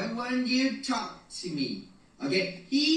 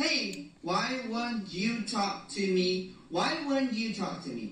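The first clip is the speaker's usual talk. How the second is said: normal talking voice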